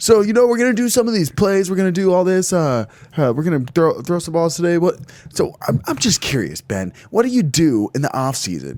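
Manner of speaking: high, swooping, forced-energetic hype in an interviewer voice. Retelling an interview of a quarterback: imitating a forced energetic interviewer. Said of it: "He's trying to be all energetic".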